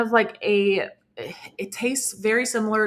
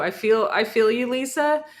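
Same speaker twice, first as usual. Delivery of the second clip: speech breaking into laughter, laughing while talking; 2 semitones higher than usual. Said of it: "I'm laughing looking at all".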